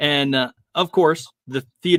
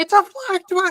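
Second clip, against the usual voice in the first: very high shouted, blurted outburst. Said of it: "Why would you shout that?".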